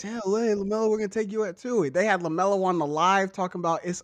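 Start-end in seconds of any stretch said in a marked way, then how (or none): 0.0-1.9 put-on higher-pitched California accent. Retelling a phone call to a draft pick: Steve Kerr Cali voice. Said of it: "In that Steve Kerr Cali voice".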